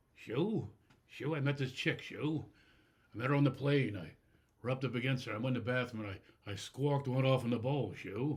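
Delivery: slow, drawn-out, confiding, buddy-like comedian voice. Doing an impression of comedian Richard Jeni telling a joke: Richard Jeni impression. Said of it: "I'm gonna do my Jeni impression".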